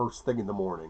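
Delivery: ordinary delivery, nothing marked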